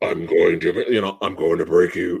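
deep, distorted, garbled, hard-to-follow voice. Retelling how a masked villain sounded early on: distorted deep Bane voice. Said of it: "it was so distorted and deep".

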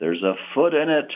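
put-on, very high, quavering, shaky yell. Retelling what a tourist yelled back to him, imitating a shaky yell. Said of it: "yelled back with a shaky voice".

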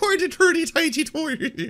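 poor put-on Irish accent. Teasing someone about his accent attempts, the speaker mimics a bad fake Irish accent. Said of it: "are you doing Irish or Swedish right now".

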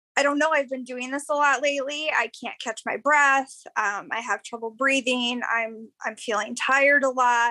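usual speaking voice

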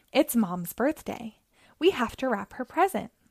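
plain

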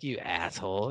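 threatening, low tone. Retelling a scene where the nurse looks at him: imitating a menacing retort. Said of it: "looks at him, like, menacingly".

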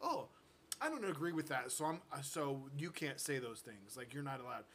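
ordinary delivery

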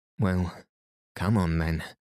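ordinary delivery

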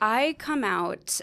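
voice breaking and cracking up high. Asked when they came out, the speaker starts to answer: voice cracking. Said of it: "I don't know why my voice just cracked".

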